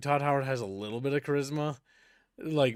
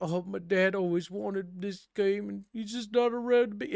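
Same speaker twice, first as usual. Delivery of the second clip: put-on weepy, teary, high-pitched pleading; 6 semitones higher than usual. Retelling a developer's tearful game pitch: imitating Peter Molyneux crying. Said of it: "and he started, like, crying".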